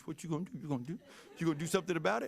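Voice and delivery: acted taunting voice. Retelling a daughter poking her brother: imitating daughter's taunting voice. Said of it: "that's the exact voice she would use".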